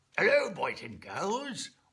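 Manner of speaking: put-on high, loud elderly rabbit puppet voice. Speaker tries out a voice for a rabbit he makes talk with a string, old man rabbit voice. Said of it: "That sounded like an old man rabbit".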